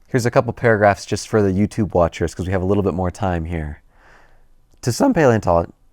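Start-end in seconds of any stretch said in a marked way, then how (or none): 4.9-5.7 voice breaking, cracking on the opening words. Reading a paleontology passage aloud for YouTube viewers, voice cracking. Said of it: "voice crack immediately".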